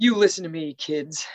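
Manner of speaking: put-on old man scolding voice. Retelling a scene where Jack scolds the kids: imitating Jack's old man scolding. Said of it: "old man scolding".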